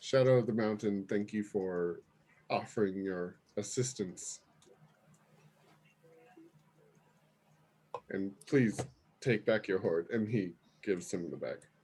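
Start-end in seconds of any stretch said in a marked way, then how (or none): 0.0-10.1 deep, confident, assured dragon voice. A game narrator voicing a dragon speaking to a player character, deeper, more confident dragon voice. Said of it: "a deeper, more confident voice".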